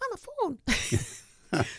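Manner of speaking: tiny, very high little puppet fawn voice. Speaker recalling a stage puppet fawn's line, tiny little fawn voice. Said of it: "it would have this tiny little voice".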